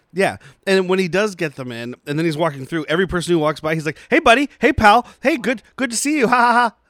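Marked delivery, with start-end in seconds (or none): 4.1-6.7 play-acted nervous voice, loud, high, with laugh. Retelling a movie scene, greeting passersby: imitating a nervous scientist. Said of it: "this very nervous-looking scientist".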